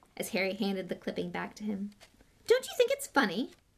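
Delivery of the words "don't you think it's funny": very high, impatient, pushing tone. Pressing someone who hands back a newspaper clipping: impatiently. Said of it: "said Malfoy impatiently".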